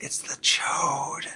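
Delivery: confiding, hushed, breathy whisper. Retelling a story where an older kid leans in: imitating a whisper. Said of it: "leans in and whispers".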